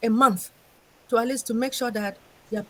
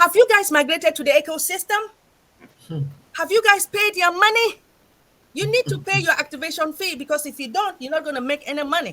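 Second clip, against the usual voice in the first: high, all-out, rousing screaming; 6 semitones higher, 4 dB louder than usual. Speaker addresses Sisters and Brother by name, screaming. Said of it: "sorry that I'm screaming".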